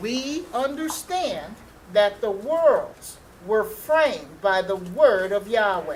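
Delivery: very slow, drawn-out, deliberate word-by-word reading. Reading a verse aloud, the speaker repeats it, said really slowly. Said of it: "Say that really slowly".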